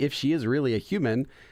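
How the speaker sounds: ordinary delivery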